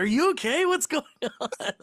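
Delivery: mock very high, alarmed, worried tone. Retelling a worried question from someone running downstairs. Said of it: "My girlfriend will come running down the stairs and be like".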